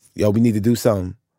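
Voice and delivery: ordinary talk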